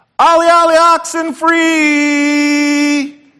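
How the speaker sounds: high, loud, carrying shout, "free" drawn out. Explaining how kids signalled hiding players it was safe, retelling a very loud shout. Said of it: "scream this one phrase in a very, very loud voice".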